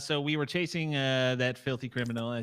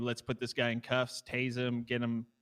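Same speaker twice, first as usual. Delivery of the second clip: normal talking voice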